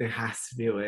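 plain

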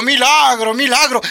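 mild, high, mock thrilled excited cry. Retelling how the family reacted to the old man walking: imitating a family shouting. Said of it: "La familia gritando".

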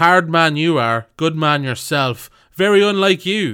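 put-on loud harsh Munster accent. Quoting Peter O'Mahony's remark to an opponent, in his harsh Munster accent. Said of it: "It's in a harsh Munster accent".

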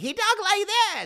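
high squeaky cartoon voice. Explaining why conservatives never liked the cartoon, doing SpongeBob voice. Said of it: "the voice".

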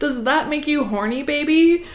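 goofy, sarcastic, high, loud silly voice. Retelling what a man said while driving around in his ute, in a silly voice. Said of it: "he weirdly said in a silly voice".

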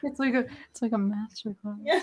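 put-on whisper. Teasing a friend by repeating their whispered praise: imitating someone whispering. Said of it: "Why do you whisper that?".

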